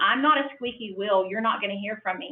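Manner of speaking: ordinary delivery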